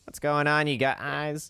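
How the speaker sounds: voice cracking at the end. Doing an impression of the listener starting a comedy set: impression of a friend starting a set. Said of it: "this is you starting your set".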